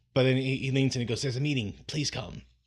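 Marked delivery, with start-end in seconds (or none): none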